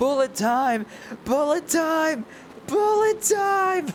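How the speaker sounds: screaming, high-pitched and drawn out.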